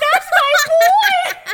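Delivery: put-on shrill, very high, very loud shriek, "boy" drawn out. Picturing a text tone of themself cheering, imitating own shriek. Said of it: "just me shrieking".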